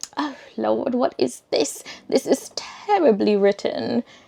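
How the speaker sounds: jokey, funny put-on British accent. Retelling reading their own writing for the first time, in a funny put-on british accent. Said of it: "I just put on a funny, like a, a British accent".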